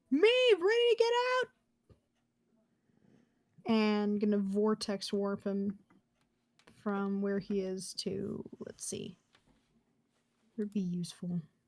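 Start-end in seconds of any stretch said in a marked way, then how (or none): 0.1-1.4 high, fast yell. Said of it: "yell out".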